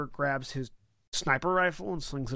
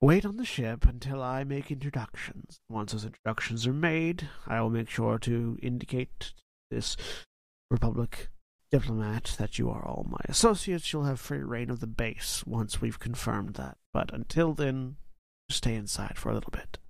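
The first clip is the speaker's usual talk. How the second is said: androgynous, modulated, reverberating voice shifting masculine and feminine; 3 semitones lower than usual. A character tells the others to wait on the ship until introductions: androgynous modulated voice. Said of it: "his voice is now modulating to that same kind of voice".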